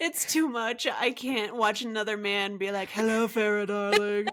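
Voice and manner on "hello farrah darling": low, deep, dropped-down man's voice. Mocking men on social media who read romance quotes: imitating a man's low voice. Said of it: "You have a low voice".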